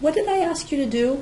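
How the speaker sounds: calm, even, curious tone, pitched slightly up. Showing a parent how to ask a kid what they were asked: calm, curious tone. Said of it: "In a very calm, curious tone of voice".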